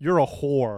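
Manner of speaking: acted dead serious deadpan voice. Imagining calling a guy friend and answering him in a put-on dead serious voice. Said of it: "in, like, a dead serious voice".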